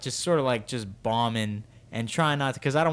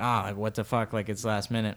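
mock-serious put-on tone; 3 semitones lower than usual. Retelling how he reacted after she only joked, mock-serious, retelling his reaction.

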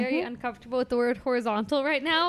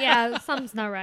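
put-on nonchalant child voice; 2 semitones lower than usual. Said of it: "just real nonchalant".

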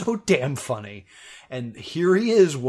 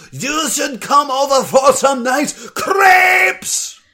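put-on screaming in a German accent; 13 semitones higher, 10 dB louder than usual. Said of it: "screaming nice things in a German accent".

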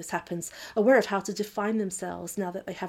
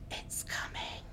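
barely voiced, hushed, very quiet whisper. Narrator reads a character whispering just before a roaring sound hits. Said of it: "Then you whispered".

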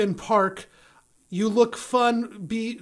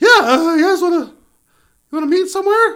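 booming, terribly faked girl voice, loud and high; 8 semitones higher, 10 dB louder than usual. Retelling a phone call about a note on a car, in a terrible girl voice. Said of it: "It's a terrible girl voice".

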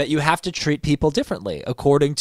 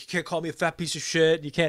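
mock angry, heated ranting outburst; 3 semitones higher, 7 dB quieter than usual. Retelling how Eddie yelled at someone through the curtain: imitating Eddie yelling. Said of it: "he just starts fucking yelling at him".

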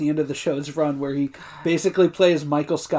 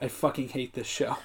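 very quiet, hushed mutter under the breath; 3 semitones lower, 11 dB quieter than usual. Retelling own reaction while watching alone: muttering under breath. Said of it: "I muttered to myself under my breath".

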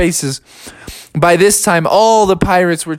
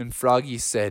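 plain reading voice

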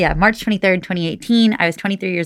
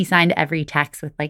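normal talking voice

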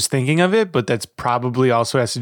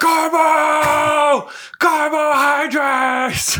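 mock yelling. Recalling chaining someone to the seat to finish an episode, retelling a yell. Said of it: "I just started yelling".

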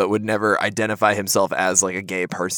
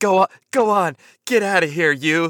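mock yell, very high-pitched and drawn-out; 9 semitones higher, 3 dB louder than usual. Retelling a movie scene of shooing off a Bigfoot: imitating John Lithgow yelling. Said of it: "yelling at the, at the Bigfoot monster".

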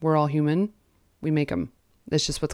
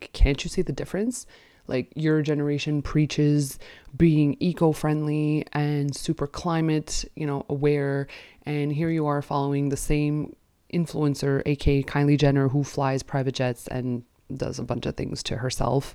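plain

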